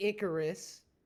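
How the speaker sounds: strong stress punched on ick in Icarus. Arguing a case to the court: stress on ICK in Icarus. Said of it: "emphasis on ick".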